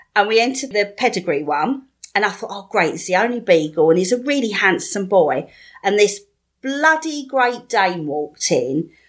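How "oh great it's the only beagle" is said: ordinary delivery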